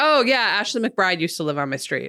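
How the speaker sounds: put-on, super nonchalant, bragging tone of voice. Imitating someone humble bragging about a celebrity: imitating a super nonchalant brag. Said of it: "super nonchalant way".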